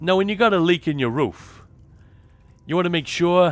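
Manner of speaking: put-on terrible Boston accent. Imitating a Bostonian show about fixing a roof leak: terrible Boston accent. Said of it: "My Boston accent is terrible".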